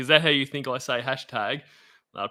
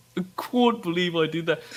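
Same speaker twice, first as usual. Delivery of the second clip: put-on strange accent, can't bent oddly and pitched higher; 5 semitones higher than usual. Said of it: "what is that accent".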